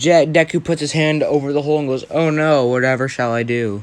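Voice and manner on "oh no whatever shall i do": sarcasm laid on thick, acted out. Retelling a story scene where Deku mocks a gunman: mock sarcastic voice. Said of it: "Very sarcastically".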